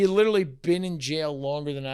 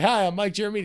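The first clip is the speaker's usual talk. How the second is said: put-on formal, professional, buttoned-up voice, higher; 6 semitones higher, 4 dB louder than usual. Retelling first meeting a new colleague at the office: imitating Mike, all professional. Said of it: "He's all professional, right?".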